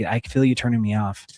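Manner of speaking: ordinary talk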